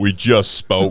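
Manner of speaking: imitated sudden low voice. Retelling a man's line from a show, imitating a sudden deep voice. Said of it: "he drops like 14 octaves".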